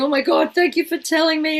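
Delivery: high, tearful mock crying with heartfelt tone. Retelling a woman's thanks on a dance floor at a hen do: imitating a woman crying. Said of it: "her crying in my arms going".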